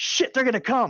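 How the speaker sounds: shrill, very high yelling. Voicing a fleeing kidnapper warning his partner: kidnapper yelling. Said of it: "these attempted kidnappers yell out".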